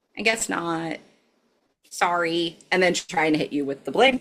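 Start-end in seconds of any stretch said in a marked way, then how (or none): 0.2-2.6 sorrowful, downcast, sad, slow, small voice. Game master voicing Carol after Lewis shakes his head no: sad. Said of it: "Carol just kind of looks sad and goes".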